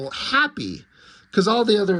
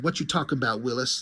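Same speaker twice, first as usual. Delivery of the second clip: ordinary delivery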